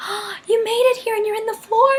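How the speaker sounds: excited, surprised, high squeal.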